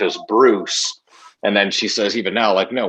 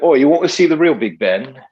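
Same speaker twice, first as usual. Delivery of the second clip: fake English accent, pitched up; 5 semitones higher, 4 dB louder than usual. Joking that everyone should do English accents, the speaker uses a put-on English accent. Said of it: "we should all just do English accent".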